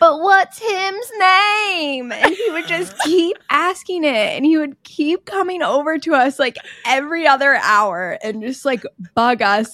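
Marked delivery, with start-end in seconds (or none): 0.0-2.1 put-on high, slow little boy's Southern accent, drawn out. Retelling what a little boy kept asking, in his little southern accent. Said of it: "in this little southern accent".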